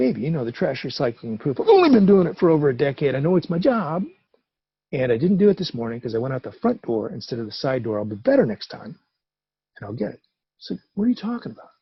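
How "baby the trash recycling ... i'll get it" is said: plain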